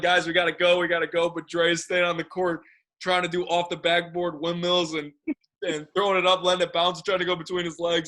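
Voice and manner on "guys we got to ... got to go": mock yelling, acted-out shout. Recalling the end of basketball practice, acting out Eagles calling everyone; retelling a yell. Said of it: "Eagles yelling".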